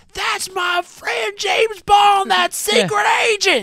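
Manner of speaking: high, shrill, loud, full-throated hollering. Retelling how the sheriff calls out about Bond: imitating a yell. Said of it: "he's yelling out".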